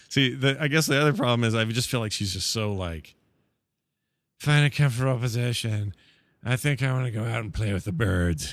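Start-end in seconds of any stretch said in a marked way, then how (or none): 4.3-8.5 imitated hippie voice. Mocking the meditation narrator as a dirty hippie: imitating a dirty hippie. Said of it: "like a dirty hippie".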